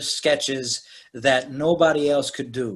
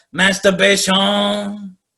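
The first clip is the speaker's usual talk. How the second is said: put-on Cajun accent, pitched up, landing on the ending; 6 semitones higher, 4 dB louder than usual. Retelling a comedy sketch answer: imitating Cajun Man's Cajun accent. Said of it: "say things with that Cajun accent at the end".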